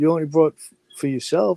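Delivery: needling, mocking, ball-busting teasing tone. Retelling how Lefty teased a friend over his food: imitating someone teasing. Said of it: "fucking Lefty started breaking his balls".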